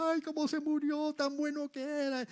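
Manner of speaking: high, wailing fake mourner voice.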